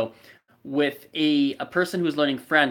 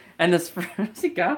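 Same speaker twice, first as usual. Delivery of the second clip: giggling, laughing through broken words; 4 semitones higher than usual. Trying to explain a framework while someone nearby laughs: laughing while talking. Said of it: "she's laughing and I can't stop laughing".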